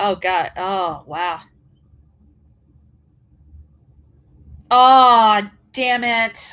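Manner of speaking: loud, mad, angry, fed-up exclamations. Checking a match result and finding the one they hoped would win lost: angry. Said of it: "I'm so mad right now".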